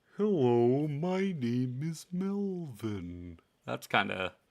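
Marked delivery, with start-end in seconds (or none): 0.2-3.4 fun, goofy turtle-creature character voice. Describing a turtle named Melvin from a finished campaign, doing Melvin the turtle voice. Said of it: "who talked a lot like this".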